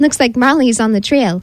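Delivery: ordinary delivery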